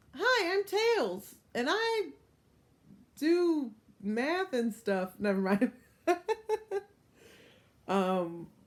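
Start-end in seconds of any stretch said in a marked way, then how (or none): 0.2-5.1 very high, bouncy, sing-song cartoon voice. Speaker runs through Sonic character voices: Tails voice. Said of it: "do a bunch of Sonic voices".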